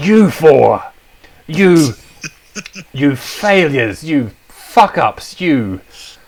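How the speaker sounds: furious villain rant, very slow and high-pitched. Voicing a villain who sees the four again after twenty years, angry villain. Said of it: "I've traded that in now. I'm not a necromancer. I'm a demonic sorcerer. / He is goes through a few things in his face".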